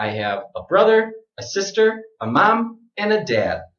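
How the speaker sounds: list intonation, up on each item, down on "dad". Listing family members, brother, sister, mom, dad: each item rises, dad falls. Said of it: "all of the items in the list go up except for the last item. So that's down".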